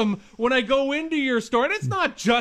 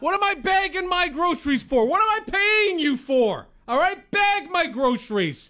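high, put-on mad, fake-angry rant; 5 semitones higher than usual. After warning the listener you'll get unnecessarily mad: mock-angry rant. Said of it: "I'm going to put on my mad voice".

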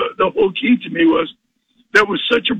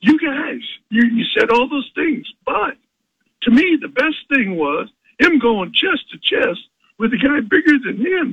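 acted, reined-in, high-pitched mild yell; 5 semitones higher than usual. A speaker recalls reacting to the hosts heard on the radio: retelling shouting at the radio. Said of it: "I was screaming at at, at the radio".

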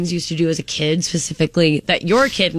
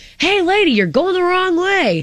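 play-acted, very high, high-pitched holler; 13 semitones higher than usual. Retelling what their dad yelled out the window at a woman: retelling a yell. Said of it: "He had yelled out the window".

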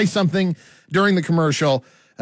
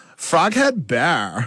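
put-on college sorority girl voice. Rehearsing a live beer commercial, the host tries out a sorority girl voice.

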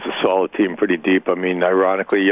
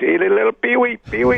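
very high, creaky, goofy funny voice. Retelling how Joel Quenneville gave him his nickname, in a little funny voice. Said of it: "he used to do it in this little funny voice".

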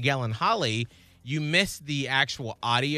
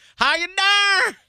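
shrill, booming, very high and very loud delivery; 9 dB louder than usual. Performing a catchphrase again after being asked to say it: imitating Martin Lawrence. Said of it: "Say it again".

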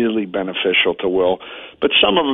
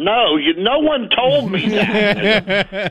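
yelling, very high, very slow, drawn out; 12 semitones higher than usual. Retelling an argument at the dinner table: imitating own past yelling. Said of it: "And I'll start yelling".

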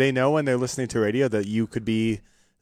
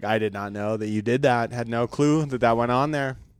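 ordinary talk

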